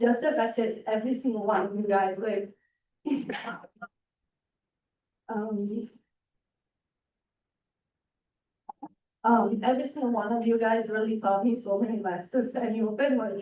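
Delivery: choking up, on the verge of crying. Thanking host families while presenting, on the verge of tears. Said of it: "I'm gonna start crying".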